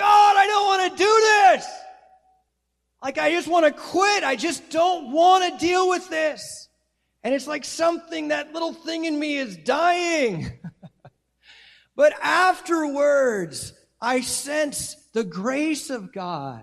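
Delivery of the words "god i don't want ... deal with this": shouted, very high, very loud cry. Speaker recalls crushing times in life, retelling crying out to God. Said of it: "where I'm crying out".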